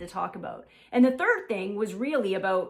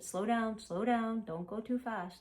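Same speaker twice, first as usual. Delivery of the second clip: put-on hushed under-breath voice, quieter; 9 dB quieter than usual. Retelling what she said during the dance dip: imitating someone talking under their breath. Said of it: "she was talking to me under her breath".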